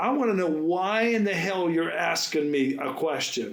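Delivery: strong, forceful, heated angry tone. Retelling a sharp answer to a stranger's question: retelling own angry demand. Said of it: "I said very strongly".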